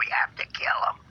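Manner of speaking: raspy, gritty, distorted voice. Describing a hard-to-decipher recording, imitate it in a raspy, gritty, distorted voice. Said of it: "it's a really raspy, gritty, distorted voice".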